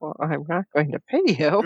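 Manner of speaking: acted out, utterly dry, no hint of joking. Retelling a line Harry says while recapping: deadpan Harry impression. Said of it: "And he's just so deadpan".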